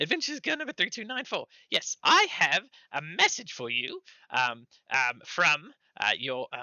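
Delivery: tiny, high, squeaky gnome voice. A gnome runs up to deliver a message to the party: high squeaky gnome voice. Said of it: "a high squeaky voice".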